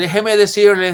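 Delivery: fake American accent, very loud and high. Mimicking how some people talk when their voice changes, in a mock gringo accent. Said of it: "algunos hablan así, les cambia la voz".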